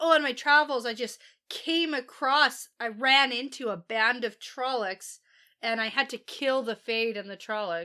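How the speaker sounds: ordinary talk, nothing marked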